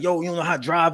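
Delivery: mock screaming. After a traffic run-in, speaker acts out what the other man might scream: retelling a scream.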